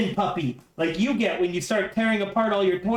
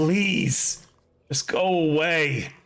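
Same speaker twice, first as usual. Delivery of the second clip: low, pleading, begging whine, little creature voice; 4 semitones lower than usual. Game master voices a creature looking at the player, begging, whining creature. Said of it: "And it begs now, as it does a little whine".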